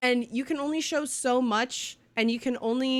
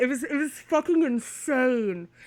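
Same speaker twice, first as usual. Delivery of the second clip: slow, choked up, holding back tears. Recalling a huge personal moment, holding back tears. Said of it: "I'm trying not to cry".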